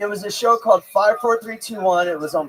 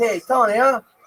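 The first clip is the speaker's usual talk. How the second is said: put-on smooth, knowing, seasoned old-hand tone. Retelling a question the son asked at the mall: imitating son sounding like a pro. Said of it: "he asked me like he was, like, a pro at it".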